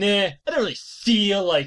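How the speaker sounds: condescending, superior, offhand dismissive tone. Retelling a manga scene where the character refuses to help: imitating Saman being condescending. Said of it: "looks down, condescending".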